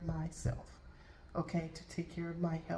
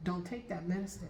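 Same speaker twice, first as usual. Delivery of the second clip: normal talking voice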